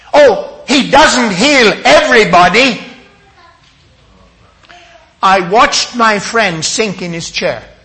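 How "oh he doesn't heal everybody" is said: high, loud, harsh, stern voice. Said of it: "quite harshly, quite sternly said".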